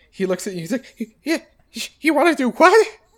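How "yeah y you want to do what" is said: very high, loud, bewildered creature voice. Voicing a devilfish asked to move the blimp: confused devilfish voice. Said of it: "he's kind of confused".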